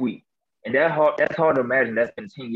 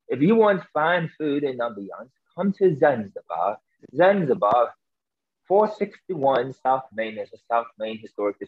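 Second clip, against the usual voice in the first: put-on light South African British accent. Recreating the commercial read they recorded on a voicemail, in a light South African British accent. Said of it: "this light, I would say South African British accent".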